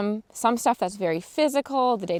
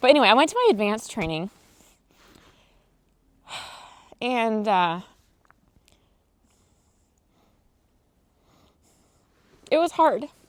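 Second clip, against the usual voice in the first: voice strained, holding back tears, trying not to cry. Speaker telling viewers about advanced training, holding back tears. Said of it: "I'm trying so hard not to".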